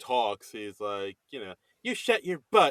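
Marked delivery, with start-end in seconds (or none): 1.8-2.7 high-pitched, effeminate Southern voice. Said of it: "very, you know, Southern effeminate?".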